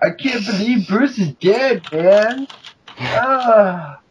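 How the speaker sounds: very slow high drawl, stretched "ah" sound. Imitating an actress's dialogue from a knockoff film: Tommy Chong voice. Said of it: "Sounds like Tommy Chong".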